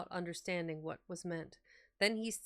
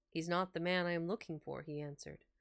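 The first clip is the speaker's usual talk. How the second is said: plain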